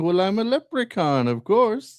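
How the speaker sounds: high, slow character voice. Retelling what the leprechaun answers the woman: Leprechaun voice. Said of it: "He's like".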